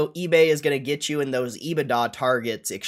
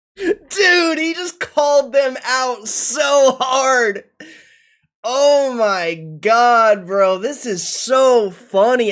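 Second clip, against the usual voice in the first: loud, high-pitched talking through laughter; 10 semitones higher, 7 dB louder than usual. Reacting to someone being called out hard, laughing while talking. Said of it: "I can't stop laughing".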